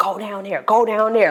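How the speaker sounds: put-on panicked, urgent tone. Retelling a moment at the basement door of the childhood home, retelling own panicked urging. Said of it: "Like I'm panicking".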